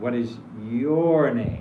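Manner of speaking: the word your stressed and stretched out. Asking someone's name as an invitation to speak, stressed, lengthened your. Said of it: "make the your a little bit long and uh, in emphasis".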